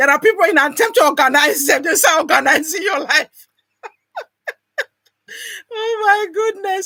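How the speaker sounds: words spoken with laughter spilling through. Speaker reads out a listener's comment and replies, laughing while talking. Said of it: "Sorry, I'm laughing".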